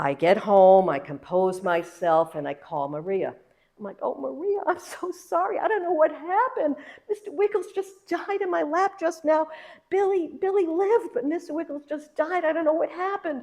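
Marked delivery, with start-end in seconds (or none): 4.0-13.4 very high-pitched, tearful, sobbing voice. Retelling a phone call apologizing to maria: retelling sobbing on the phone. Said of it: "I'm sobbing, I'm all upset".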